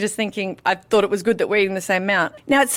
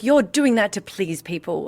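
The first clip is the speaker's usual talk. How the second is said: mock proper English accent, woman's voice. Quoting a woman who kept pushing her to use her real voice, imitating a proper English woman. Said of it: "she was English and proper".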